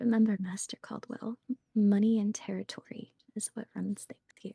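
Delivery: soft, close whisper right at the ear. Whispering advice into Caldwell's ear in character: whispering in someone's ear. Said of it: "I'm gonna whisper".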